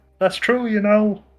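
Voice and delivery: put-on frog puppet character voice. Voicing a character who calls over in agreement: Kermit voice. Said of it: "That was the Kermit voice".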